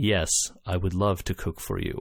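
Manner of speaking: deadpan, utterly dry, flat and level, no inflection. Recounting a film character disguised as a cook, mock deadpan delivery. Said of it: "the perfect deadpan delivery".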